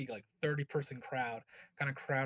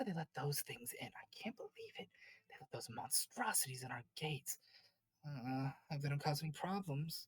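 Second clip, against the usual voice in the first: soft, hushed whispering; 2 semitones higher, 6 dB quieter than usual. Voicing townsfolk in a crowd gossiping about monstrosities let in: townsfolk whispering. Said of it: "you hear people just kinda whispering".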